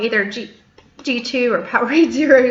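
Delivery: speech broken by hiccups. Listing favorite lemon lime drinks, hiccuping while talking. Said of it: "Sorry, I got the hiccups".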